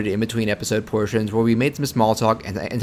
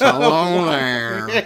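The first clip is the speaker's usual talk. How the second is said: put-on elderly talk-host voice, pitched higher; 6 semitones higher than usual. Imitating a voice dubbed over a cartoon clip: Larry King voice. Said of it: "with that Larry King voice".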